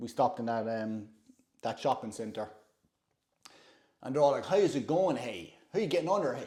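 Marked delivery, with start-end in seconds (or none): 4.5-6.5 put-on Dundalk Irish accent. Retelling how people at a Dundalk shopping centre greeted them, Dundalk accent. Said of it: "with a Dundalk accent".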